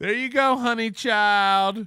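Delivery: mocking male voice. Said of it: "This is how he talks to women".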